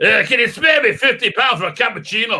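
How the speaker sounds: fake Scottish street-seller voice, put-on accent. Acting out a windscreen washer demanding fifty pounds: put-on Scottish accent. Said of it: "Why are they suddenly Scottish?".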